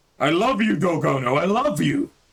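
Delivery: loud bellow. Answering whether he is well enough to fight, bellowing. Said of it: "Your bellowing has given us away".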